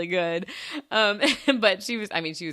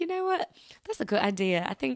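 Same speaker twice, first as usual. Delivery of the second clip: very bad, put-on fake British accent; 6 semitones higher than usual. Answering a coworker who asked about talking British, in a bad British accent. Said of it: "Oh, that was terrible".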